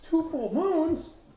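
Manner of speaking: worried game character voice.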